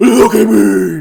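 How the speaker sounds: very loud growl at full volume. Retelling a villain's line in a movie scene: Batman-style growl as Freddy. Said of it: "this is where he gets real Batman-y".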